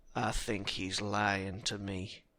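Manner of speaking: put-on charming Southern accent, vaguely threatening. Imagining what a man on the phone says after hanging up: mock-threatening charming southern accent. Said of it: "saying in that charming southern accent in a vaguely threatening way".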